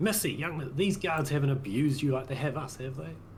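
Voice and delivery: loud, high-pitched voice. A character walks over, speaking for the guards' benefit: loud voice. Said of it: "in a loud voice for the guards' benefit".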